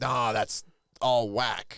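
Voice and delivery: put-on grumpy old man voice, slow and angry. Acting out disapproving of street racing: mock angry grandpa voice. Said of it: "I sound like an angry grandpa if I do that".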